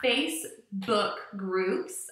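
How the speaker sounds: slow, careful, clearly enunciated speech. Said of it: "I've been teaching too much today".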